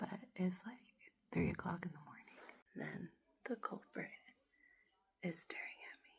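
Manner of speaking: low, hushed whisper. Speaker is cleaning up at three in the morning: whispering. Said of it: "I don't know why I'm whispering".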